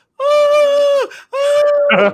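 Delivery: light, very high, drawn-out little cry, "ah". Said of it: "it's very light and very high pitched".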